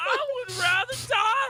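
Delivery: put-on screaming. Retelling how he screamed about not wanting a job: imitating someone screaming. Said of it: "them screaming about how he doesn't want a job".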